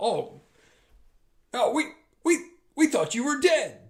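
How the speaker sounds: stammering, very high, frightened yell. Voicing guards who see the jailer alive: yelling in fright. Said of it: "They yell".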